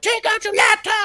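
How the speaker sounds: barked yell, pitched very high. Retelling how security staff at pre-check yell: imitating a security agent yelling. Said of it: "they still yell at me".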